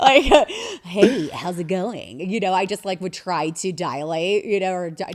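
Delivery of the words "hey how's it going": put-on voice of a very heavy smoker. Recalling trying to sound on air like a voice like a million-cigarette smoker. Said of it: "like I smoked a million cigarettes".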